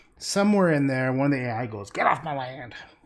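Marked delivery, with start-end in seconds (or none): 1.9-2.7 put-on grumpy old voice, yabbering, louder. Retelling a line a video game character says: imitating grumpy yabbering. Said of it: "my now famous grumpy yabbering".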